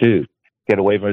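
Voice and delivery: put-on tearful pleading voice. Retelling a phone call urging a friend to leave: retelling own begging plea. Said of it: "I begged him. I literally begged him. I was in tears".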